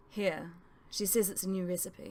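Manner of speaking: ordinary talk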